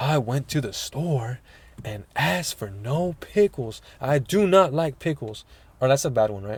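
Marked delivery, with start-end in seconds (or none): 0.0-5.4 slow delivery, every word drawn out. Showing how Jeffrey Dean Morgan talks: Jeffrey Dean Morgan impression. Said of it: "the way Jeffrey Dean Morgan says it is like".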